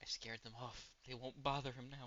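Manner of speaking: soft, barely-there half-whisper. Game master voices an unseen voice heard in the morning, half-whispering. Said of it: "you hear a voice whisper".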